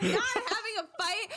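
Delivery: put-on very high, heated, insistent voice. Speaker going over a text argument with the other person, getting heated. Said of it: "I'm just getting heated".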